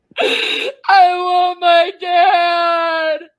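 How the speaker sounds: put-on sobbing like a small child. Being taunted in a quarrel, sobbing for dad: crying like a toddler. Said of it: "Now you sound like a toddler".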